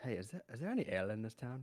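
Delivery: quiet, soft, under-the-breath half-whisper. Voicing a character who asks a townsman about ale: half-whispering in character. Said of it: "kinda whispers".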